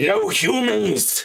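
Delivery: rough, gruff, very high barked shout. Narrating the scene, voicing someone shouting from the slave quarters as they near the door: gruff shout. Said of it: "you hear a gruff voice shout out".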